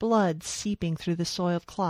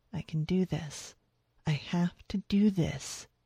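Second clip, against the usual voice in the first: whispered, much quieter; 3 dB quieter than usual. Helping a frightened man off the truck, she tells herself, whispered. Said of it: "she whispered".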